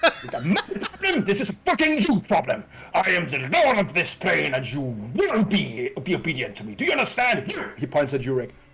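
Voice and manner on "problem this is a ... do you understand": furious, high-pitched, swooping angry shout. Provoked by snark, the lord of this plane explodes with shouting. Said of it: "he like explodes a little bit with shouting".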